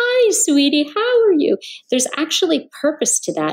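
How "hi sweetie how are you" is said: put-on high, undulating, cooing baby talk. Showing how mothers talk to their babies: high-pitched motherese. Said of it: "the high-pitched tones that a mother will make".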